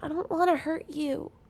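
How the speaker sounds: very small voice. Narrator voicing her line from deep under the slide in the dark, very small voice. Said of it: "you'll hear a very small voice say".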